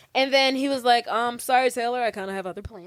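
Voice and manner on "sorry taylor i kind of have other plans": apologetic, dismissive man's voice. Retelling a movie scene, imitating Zach's line to Taylor. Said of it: "you sound like him".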